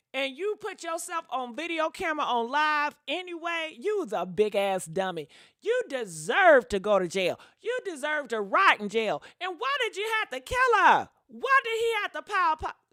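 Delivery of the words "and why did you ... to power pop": full-on shouting, very high and shrill. A speaker ranting to the audience about a killing, yelling. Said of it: "Am I yelling too much?".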